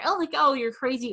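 light, joking, teasing tone. Showing a joking way to call someone crazy: light and joking. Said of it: "to say it in like a joking manner".

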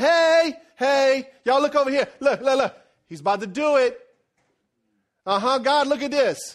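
loud hollering with a taunting tone. Acting out the enemy calling God to look at a sinner: hollering as the enemy. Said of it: "the enemy starts hollering".

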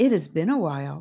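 ordinary delivery

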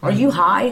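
play-acted angry, mad tone. Retelling what the girlfriend said: imitating someone mad. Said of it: "She's mad".

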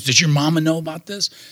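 put-on shocked voice. Retelling a second-grade teacher's reaction to a gangster ambition: imitating a shocked teacher. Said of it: "her chin hit the floor and she goes".

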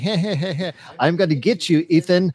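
over-the-top hammy villain voice, drawn-out "hey". Describing a movie's over-the-top villain, doing an over-the-top villain voice. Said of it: "he was almost like he was twirling a mustache".

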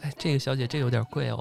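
mock-deferential politeness. Acting out how staff would answer her, imitating very respectful staff. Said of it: "人家就是特呃特恭敬的".

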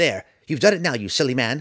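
squeaky sprite voice, high and loud. Narrator reads the sprite's line to the man, squeaky Tifonus voice. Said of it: "The sprite ambled about as best he could, ... Roddy froze at the unexpected squeaky voice".

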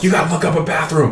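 mock pressing, urgent yelling. Retelling a drive in the car, imitating himself yelling at her. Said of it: "yelling at her".

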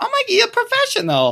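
awful, squeaky, very high put-on mother voice. Imitating his mom bragging to her friends: horrible impression of his mom. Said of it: "it's a hilarious, horrible impression of her".

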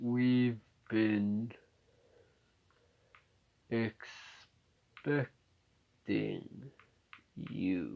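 really slow, hushed, sluggish, drawn-out tortoise drawl. Retelling a story where a winged tortoise greets the arrivals: slow tortoise voice as Jim. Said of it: "In a really slow voice".

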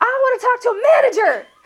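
very high, shrill, acted-out shouted yell. Retelling a demand to a bank worker: imitating own past yelling. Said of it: "at the point where I'm yelling".

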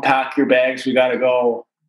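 plain

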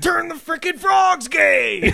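very high, rough, ranting yell. Joking about who reviews movies, imitating Alex Jones. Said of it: "I can imitate Alex Jones".

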